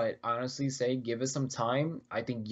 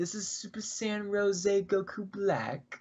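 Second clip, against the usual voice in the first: put-on British accent, pitched up, slow delivery; 9 semitones higher than usual. Quoting a game character's select-screen line, in a British accent. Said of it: "Will you do it in a British accent?".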